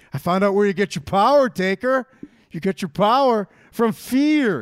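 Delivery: loud, booming voice, fear stressed hard. Quoting a line to Taker in a Big Show impression. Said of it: "Don't I kind of sound like him? Is there a Big Show inflection? Let me try that again".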